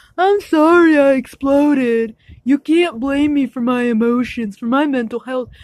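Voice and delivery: acted-out wronged, blameless, playing-the-victim tone. Retelling what another person said, imitating someone playing the victim. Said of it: "she plays the victim card".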